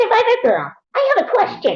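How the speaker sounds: very high, sing-song, swooping character voice. Challenged to show it, doing an impression of a man on the spot. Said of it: "I'll do it right here".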